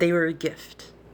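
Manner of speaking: ordinary talk, nothing marked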